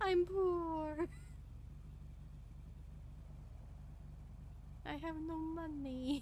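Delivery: exaggerated, overdramatic, high, drawn-out "poor". Speaker complaining to the other speaker about being below 10k again, mock-dramatic. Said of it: "I'm just being dramatic".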